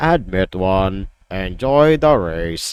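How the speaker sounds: flat, toneless, very low droning monotone. Reading a game card, the speaker voices the creature's only line: monotone. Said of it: "it says that in the most monotone way possible".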